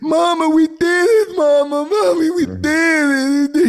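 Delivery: put-on weeping cry, very high and very slow. Retelling a fighter's post-fight interview: imitating Vitor Belfort crying. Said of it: "he started crying like he won the belt".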